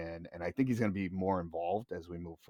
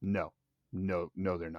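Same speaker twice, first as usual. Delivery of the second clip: put-on dead-serious, deadpan delivery. Retelling a reply heard at a trade show: imitating a dead serious reply. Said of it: "he was dead serious".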